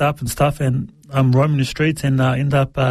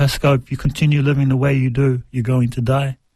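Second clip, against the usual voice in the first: put-on warm voice, faster. Retelling how the Lord spoke to him, in the Lord's warm, secure voice. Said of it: "most beautiful, most secure, warm voice".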